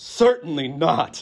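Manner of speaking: put-on loud, aghast South African accent. Quoting a liberal skeptic's reply, retelling an aghast reply, South African accent. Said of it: "aghast in his Johannesburg, South African accent".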